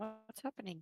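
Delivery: soft, high, hushed, barely audible half-whisper. Asking a companion who says it's too loud, half-whispering in character. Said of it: "She'll go down to a whisper".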